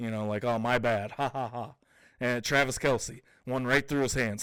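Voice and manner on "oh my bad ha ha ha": mock careless laughter, much slower. Speaker retells a player laughing off a mistake; mimicking a player laughing it off. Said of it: "he's laughing".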